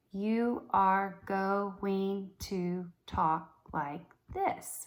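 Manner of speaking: very slow robot voice, syllables split apart. Showing students the robot technique: robot syllable-timed speech. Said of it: "Remember that syllable time speech technique".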